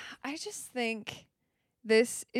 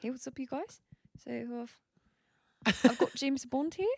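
put-on New Zealand accent, higher; 3 semitones higher than usual. Imagining a Bond villain from New Zealand, speak in a put-on New Zealand accent. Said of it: "they have a New Zealand accent".

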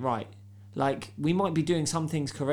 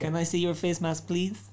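put-on Filipino accent; 3 semitones higher than usual. Retelling the woman at A&E when he walked in, Filipino accent. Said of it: "What accent is that?".

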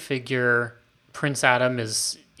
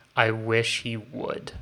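put-on disappointed dad voice, slower. Recapping the series, quoting the king about his son in a mock-disappointed father voice. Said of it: "in the most disappointed father voice I've heard in this series".

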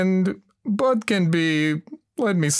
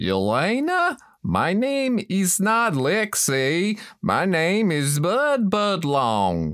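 put-on down-home Texan cowboy accent; 3 semitones higher than usual. Bud, correcting yelena about his name, speaks in a texan accent. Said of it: "Why are you talking with weird alien accent".

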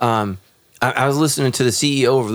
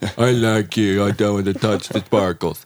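put-on dopey smitten guy voice, lower; 4 semitones lower than usual. Mocking how guys act when they're attracted: put-on dumb guy voice. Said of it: "I'm sorry that I did that voice".

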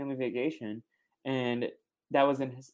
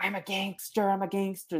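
mock high, full-throated, top-of-the-lungs screaming; 6 semitones higher than usual. Retelling a man at the airport gate, the speaker is imitating someone screaming. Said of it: "Screaming at the top of his lungs".

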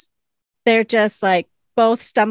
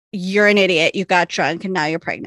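ordinary talk, nothing marked

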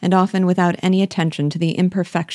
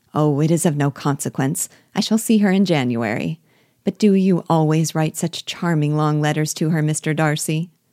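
usual speaking voice

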